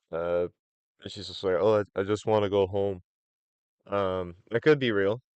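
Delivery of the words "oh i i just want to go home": acted-out, mock crying, tearful voice. Retelling a clip of a woman escorted out by Secret Service, imitating her crying. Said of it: "she's like crying".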